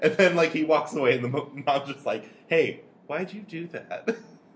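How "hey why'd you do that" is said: very calm, unruffled voice, pitched up. Describing a scene, the speaker acts out the mom questioning the dad: imitating a calm mom voice. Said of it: "Just a very calm mom voice".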